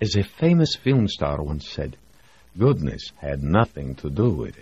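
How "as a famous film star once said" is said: plain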